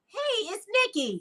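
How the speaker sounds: very high, borrowed voice. Telling Nikki how she always says hello, going into an imitation of Nikki's voice. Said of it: "I feel like I gotta go into your voice".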